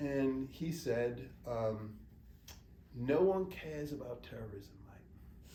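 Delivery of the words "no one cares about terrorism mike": slow, terrible, put-on British accent. Giving a man's direct quote in a terrible british accent. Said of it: "I'm sorry to do this terrible British accent".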